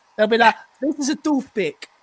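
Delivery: put-on Italian accent. Imagining how Atletico Madrid will react to a player, in a put-on Italian accent. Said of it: "I'm speaking in an Italian accent".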